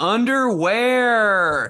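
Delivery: loud, high-pitched, drawn-out, stretched-out whine. Retelling being a whiny kid at the pool: imitating own loud whiny voice. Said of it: "underwear so loud in that whiny voice".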